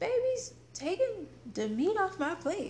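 put-on high, loud, complaining little-girl voice.

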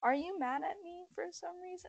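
very hushed, quiet, sad voice. Retelling how he asked her a second time, imitating a sad question. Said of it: "he asked me really sadly earlier".

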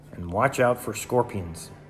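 ordinary delivery

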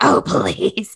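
sudden, brief demonic devil voice. Repeating another speaker's odd line: imitating a devil-like voice. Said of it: "It kinda turned into the devil for a second".

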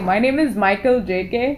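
put-on thick, heavy Hindi accent. Retelling an encounter, imitating the man giving his name, thick Hindi accent. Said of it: "an Indian man with a very thick Hindi accent".

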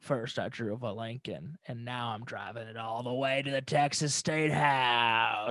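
slow delivery with the word house drawn out. Joking about an actor's car commercials: Matthew McConaughey impression. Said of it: "It's a fun impression to do".

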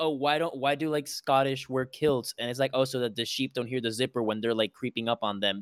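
ordinary delivery

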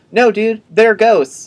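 very high, shrill, loud shout. Retelling how Anne shouts across the lawn at Nicholas: imitating Anne shouting.

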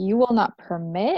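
mock affronted, offended, indignant disbelief. Retelling a character's reply after being told what she may do: imitating offended indignation. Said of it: "she gets offended".

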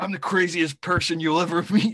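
very loud, high, relishing, gleeful gloating tone. Retelling a film line said by a bomb expert: imitating gleeful relish. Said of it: "with such relish and glee".

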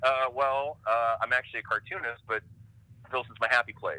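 ordinary talk

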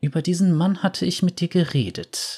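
murmured low-voiced aside. Lux's mother speaks to Lux about the man on the couch: murmured. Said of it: "raunte ihre Mutter".

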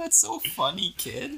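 very high, slow, condescending, fake amused laugh-it-off tone. Retelling how she laughed at the speaker, imitating someone laughing it off. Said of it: "ah, ha, ha".

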